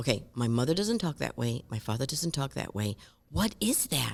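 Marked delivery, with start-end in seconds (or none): none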